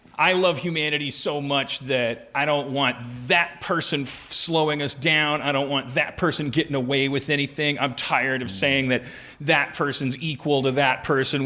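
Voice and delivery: ordinary talk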